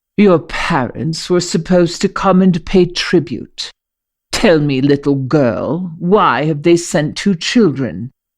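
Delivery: haughty, scornful, contemptuous, drawn-out delivery. Reading a story aloud, voicing the commander with a haughty smirk: commander speaking scornfully. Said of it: "he says scornfully".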